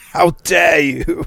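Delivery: high, aggressive upper-class posh accent. Imagining a celebrity as a type of man who talks like this, aggressively posh voice. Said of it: "talks in that sort of aggressively posh voice".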